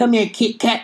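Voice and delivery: put-on old, elderly grandpa voice. Describing what someone's voice reminds them of, in an old grandpa voice. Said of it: "I just think of an old ass grandpa".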